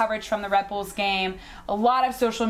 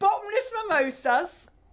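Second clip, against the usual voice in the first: put-on Cockney accent at a very high pitch; 11 semitones higher than usual. Asked if they are from Cockneyland, speaker answers in a Cockney accent. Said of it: "Are you from Cockneyland?".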